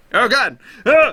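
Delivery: shrill, very high yell at full volume. Realizing they did something backwards, yelling. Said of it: "Sorry for yelling".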